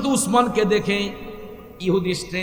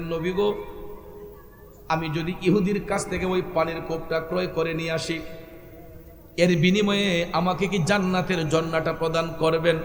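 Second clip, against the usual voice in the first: plain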